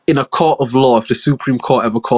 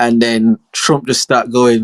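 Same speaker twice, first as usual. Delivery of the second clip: ordinary talk, nothing marked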